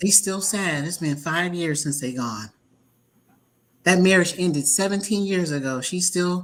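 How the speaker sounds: ordinary delivery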